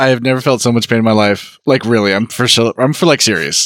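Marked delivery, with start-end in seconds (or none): 0.0-1.6 flat, emotionless deadpan monotone. Correcting the quote of an actor's line: imitating a flat line with no emotion. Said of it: "He says it".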